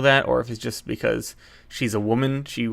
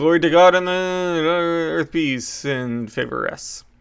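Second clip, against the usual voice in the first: mock high, booming, resounding heavenly voice, "earth" drawn out; 5 semitones higher, 4 dB louder than usual. Retelling the angel's announcement to the shepherds, in a booming voice. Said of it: "said in a booming voice".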